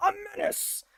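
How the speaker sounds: very high-pitched voice. Rereading a word from a definition aloud: J. Jonah Jameson voice. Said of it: "I gotta read that like J. Jonah Jameson".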